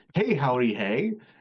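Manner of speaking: put-on cheery, chummy, good-old-pal tone. Retelling two Legionnaires greeting someone like good old chums: imitating chummy friendly greeting. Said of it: "they're talking like just good old chums".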